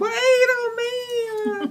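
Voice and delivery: slow, high, drawn-out yelling.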